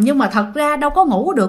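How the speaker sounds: ordinary delivery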